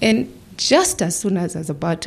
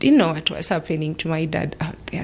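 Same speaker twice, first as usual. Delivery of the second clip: usual speaking voice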